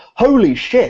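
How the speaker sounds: shrill, very high, full-voice shout at top of lungs. Recounting a young-looking man passing their table and reacting: retelling a full-voice shout. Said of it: "at the top of his voice".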